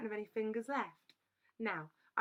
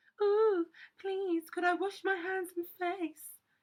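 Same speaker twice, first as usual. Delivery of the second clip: loud, high, silly mocking copycat voice; 9 semitones higher, 7 dB louder than usual. Boy mimicking the narrator's whispered question, in a high, silly voice. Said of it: "Kevin imitated, in a high, silly voice".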